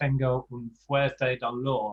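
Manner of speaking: plain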